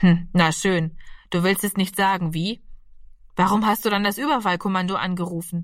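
ordinary delivery, nothing marked

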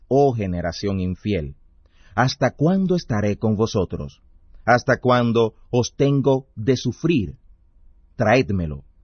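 plain reading voice

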